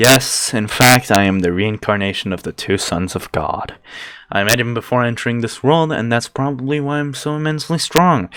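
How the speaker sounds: ordinary delivery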